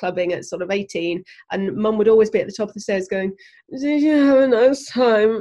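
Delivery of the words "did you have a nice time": mock drowsy, half-awake, slow, sleepy, pitched-up voice. Retelling how Mum greeted a late return from clubbing: imitating Mum sounding sleepy. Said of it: "in a really sleepy face".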